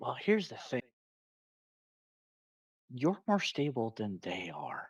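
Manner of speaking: soft, hushed half-whisper. A player's character half-whispers back to another character at the table, half-whispering. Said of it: "here I whisper back".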